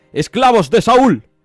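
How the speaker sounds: mocking shout. The enemy champion calls across the valley to the Israelite soldiers: mocking shout. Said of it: "Se mofó".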